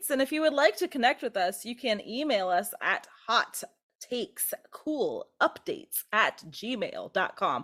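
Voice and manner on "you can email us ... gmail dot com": drawn out word by word, slow and deliberate. Reading out the email address for listeners to write in: said slowly. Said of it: "I felt that if I said it slower".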